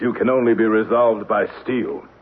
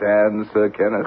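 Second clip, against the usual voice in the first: plain reading voice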